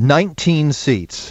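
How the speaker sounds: firm, certain, expert-sounding authoritative tone. Asked to predict how many seats will be won back, answering in an authoritative tone. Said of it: "You sounded very authoritative".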